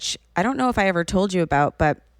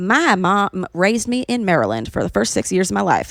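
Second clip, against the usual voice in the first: put-on Southern accent, put on; 3 dB louder than usual. Quoting her mom, who talks like this down south, imitating mom's Southern accent. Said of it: "starts talking like this".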